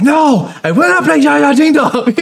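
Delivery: very high, fed-up, flat, angry no. Retelling the scene where Wires gets mad and goes outside, mock-angry refusal as Wires. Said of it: "Wires gets mad and he goes outside".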